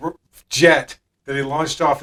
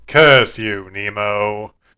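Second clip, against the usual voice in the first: low, flat deadpan with "nemo" drawn out; 4 semitones lower, 3 dB louder than usual. Describing how the character reacts when Nemo angers him: imitating Gargoyle's emotionless tone. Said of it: "he doesn't really show any emotion".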